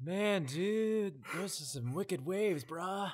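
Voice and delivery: put-on, laid-back surfer dude accent. Asked to do a surfer dude, the performer gives one: surfer dude voice. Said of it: "can you give a surfer dude?".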